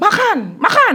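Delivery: high loud bark.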